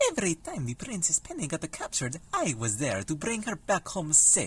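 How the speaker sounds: exaggerated put-on Italian accent. Minestrone, hero of the Fungi Kingdom, explains himself to Admiral Horatio Nelson: Minestrone's Italian accent. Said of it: "How offensive do we think this Italian accent is going to be?".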